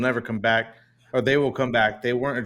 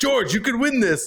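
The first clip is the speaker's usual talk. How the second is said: mock thrilled, eager, very high radio-style cheer; 11 semitones higher than usual. Retell the radio call to George while he is in a braking zone, imitating an excited Toto Wolff. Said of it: "excitedly come over the radio".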